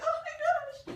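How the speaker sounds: very high, pitchy, overcome voice, drawn-out oh. Retelling crying over an amazing book, imitating own super-high pitchy voice. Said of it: "My voice was like super high and like pitchy".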